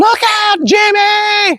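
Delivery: piercing, very high scream, a word drawn out. Retelling a car ride as Grandma warns the driver, retelling her scream. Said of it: "Grandma starts screaming".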